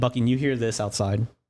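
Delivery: normal talking voice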